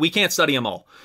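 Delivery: ordinary talk, nothing marked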